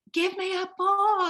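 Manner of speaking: loud, very high, drawn-out yell. Retelling how a customer at the bookstore glass demanded a book: imitating someone yelling. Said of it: "just yelled out and said".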